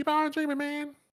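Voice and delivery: very high, tiny little doggy voice. Laughing about a funny chapter, voicing the character's line: Pochita little doggy voice. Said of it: "I could just hear his voice is like little doggy".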